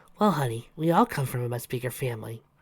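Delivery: ordinary delivery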